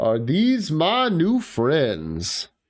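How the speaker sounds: very slow, booming, swooping delivery. A newcomer arriving at Paradiso calls out from a distance in a loud, booming voice. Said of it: "a loud, booming voice".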